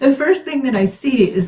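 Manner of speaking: high voice, talking through laughter. Describing what comes up in a reading, laughing while talking. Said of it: "I'm sorry, I'm laughing".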